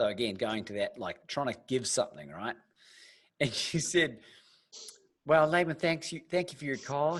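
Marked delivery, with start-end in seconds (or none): 5.2-7.2 put-on Southern drawl, higher pitch. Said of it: "and my best Southern drawl".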